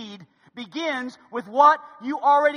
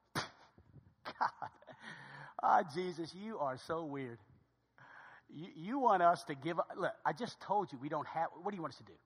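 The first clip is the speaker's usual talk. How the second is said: mock sarcastic tone, lower and quieter; 8 semitones lower, 15 dB quieter than usual. Retelling how the disciples answered God: imitating sarcastic disciples. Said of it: "they get sarcastic".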